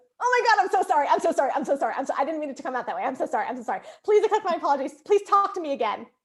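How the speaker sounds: fast, rattled-off, frantic apologizing. Retelling how she apologized after annoying you, imitating a frantic apology. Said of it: "And she goes".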